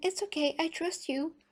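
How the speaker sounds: play-acted strangled, timid, squeezed, high little voice. Retelling a man reassuring a woman before her date, imitating a timid chicken voice. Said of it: "With this so chicken voice".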